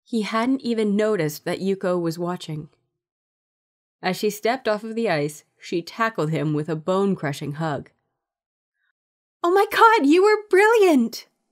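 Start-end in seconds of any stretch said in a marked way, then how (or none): 9.4-11.2 very high-pitched, loud, gasped-out exclamation. Yuko, hugging him after watching him on the ice; gasping. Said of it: "she gasped".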